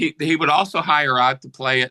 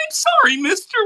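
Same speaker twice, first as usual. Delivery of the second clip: put-on very high, squeaky little-kid voice. Retelling a story about a little kid who got on stage, squeaky little-kid voice. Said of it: "with this squeaky voice".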